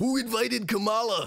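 very high, heckling wrestler voice, tossed in. Retelling what a wrestler shouted in the background: Macho Man impression.

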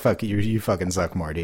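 normal talking voice

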